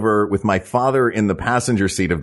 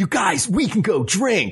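very high, eager cartoon sidekick voice; 11 semitones higher than usual. Retelling the reason for a trip to Toronto, Robin from Batman cartoon voice. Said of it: "I don't know why I sound like Robin from a Batman cartoon".

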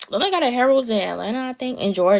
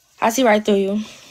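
louder, called-out teasing tone.

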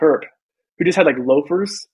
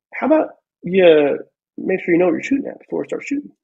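put-on very mellow voice; 4 semitones higher than usual. Retelling a sergeant major questioning a lieutenant's shooting, imitating him super calm. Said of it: "super calm, super mellow".

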